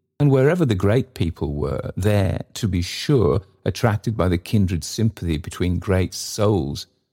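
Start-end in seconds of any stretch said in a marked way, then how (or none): none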